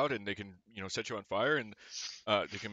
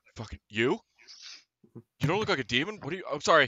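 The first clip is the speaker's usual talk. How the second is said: loud, high, freaked-out, wigging-out panic; 6 semitones higher, 7 dB louder than usual. Narrator voicing a man the players try to intimidate: freaking out. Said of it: "this dude like just fucking wigs out".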